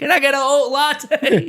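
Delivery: very high, very loud, shrill yelling. Picturing someone at a cafe yelling their latte order for no reason: yelling a latte order. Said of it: "someone just yelling for no reason their latte order".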